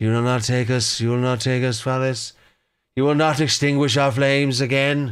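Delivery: proclaimed like an epic war trailer announcer. You try out a voice and wonder what to call it: 300 announcer voice. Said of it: "It sounds like the announcer from three hundred".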